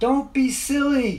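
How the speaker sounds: shrill, very loud, very high-pitched shout. Dave calls to the children who ran off into the woods, yelling out. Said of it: "he yelled out".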